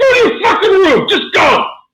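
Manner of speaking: mock shrill, raging, very high yell. Recounting losing his temper at someone, retelling a furious yell. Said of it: "I was losing my shit".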